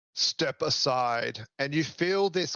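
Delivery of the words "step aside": firm, authoritative, commanding voice. Voicing a character ordering a player out of the way: commanding voice. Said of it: "says to you with a commanding voice".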